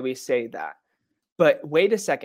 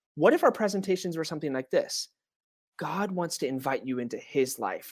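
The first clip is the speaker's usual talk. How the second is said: ordinary delivery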